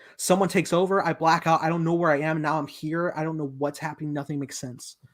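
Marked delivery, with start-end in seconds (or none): none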